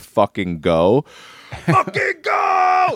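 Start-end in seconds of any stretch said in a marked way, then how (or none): 1.7-3.0 acted, very high, very slow full-lung scream. Speaker recalls grabbing a bat in his house, retelling a scream. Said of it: "and I just screamed".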